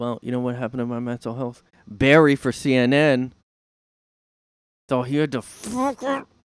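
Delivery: put-on angry TV host voice, loud yelling. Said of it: "yelling like, uh, Bill, Bill O'Reilly".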